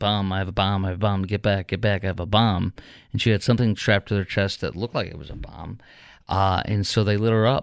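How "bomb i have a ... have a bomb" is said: ordinary talk, nothing marked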